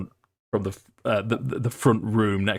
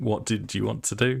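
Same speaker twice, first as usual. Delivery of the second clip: ordinary talk, nothing marked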